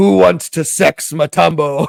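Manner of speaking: loud, gravelly, pushed-out voice. Speaker retells a teammate's story of Dikembe Mutombo walking into the club, gravelly Dikembe Mutombo voice. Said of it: "say in that in that gravelly voice".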